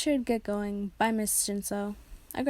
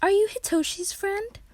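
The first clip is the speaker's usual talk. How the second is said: thrilled, excited, very high-pitched and loud; 11 semitones higher, 5 dB louder than usual. Narrating how his friend's mother invited him in, excited. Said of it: "in an excited tone".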